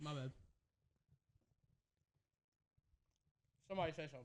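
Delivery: talking with mouth full. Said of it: "I'm chewing".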